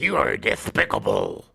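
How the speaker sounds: dropped low, rasping voice. Answering a list of cartoon characters with a Sylvester voice. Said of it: "Sylvester the Cat".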